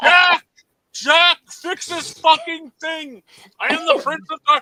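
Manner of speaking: shrill, very high-pitched, very loud yelling. Retelling a man yelling at the TV remote, imitating someone yelling. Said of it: "And he's like yelling to it".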